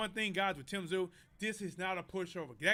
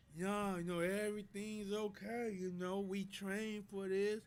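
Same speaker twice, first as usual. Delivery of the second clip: drowsy, half-asleep, just-woken voice, extra slow; 4 dB quieter than usual. Describing a fighter's recent interview, imitating Errol Spence talking extra slow. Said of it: "he's talking extra slow".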